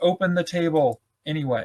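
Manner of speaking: normal talking voice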